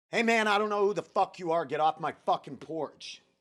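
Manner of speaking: hard, confrontational voice. Retelling telling a mumbling stranger to leave his porch, putting on an aggressive voice. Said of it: "kind of like be aggressive".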